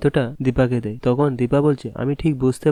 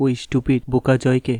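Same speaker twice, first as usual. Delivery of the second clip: ordinary talk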